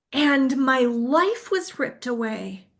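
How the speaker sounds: slow, choked-up, tearful, voice catching. Telling about a classmate's last day at school, choking up. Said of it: "I can't even say it without choking up".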